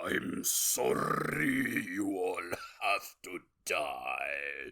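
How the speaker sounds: low, smoky drawl, rolled R's, "die" drawn out. Quoting a line from the movie Nosferatu: Count Orlok voice. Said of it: "It sounds like Count Orlok took a big old bong rip".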